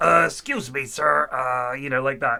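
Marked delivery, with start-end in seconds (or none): 0.0-1.3 slow, rough, creaky, drawn-out put-on voice. Retelling a comedian's Columbo impression: Columbo impression. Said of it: "he'll be like".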